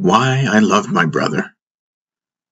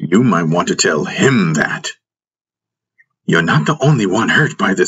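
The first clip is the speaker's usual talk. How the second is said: ordinary delivery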